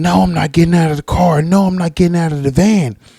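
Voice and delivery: mock yelling, high, stubborn and unyielding. Retelling a man in a van refusing the police: imitating a man yelling back. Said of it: "the dude's sitting there yelling".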